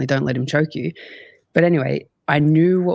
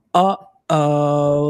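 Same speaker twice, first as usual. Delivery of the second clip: put-on condescending, arrogant 'uh oh'; 3 dB louder than usual. Retelling a grappling roll, the speaker quotes his opponent: mock-condescending, arrogant 'uh oh'. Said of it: "like in a real condescending, arrogant way".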